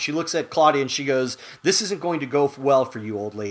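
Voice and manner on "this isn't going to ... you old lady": mock emotionless, cold, contemptuous, hateful delivery. Retelling a TV character's threat to an older woman: imitating an emotionless, hate-filled delivery. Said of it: "just emotionless and just with, you know, hatred just dripping off her".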